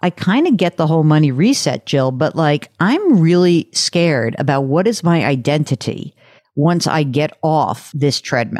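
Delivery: ordinary delivery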